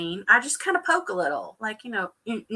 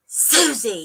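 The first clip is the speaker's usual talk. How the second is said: mock angry, loud, harsh, dirty-sounding voice; 2 semitones lower, 5 dB louder than usual. Recalling how her name sounded every day: mock-angry 'susie'. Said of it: "my name sounded dirty. It was like".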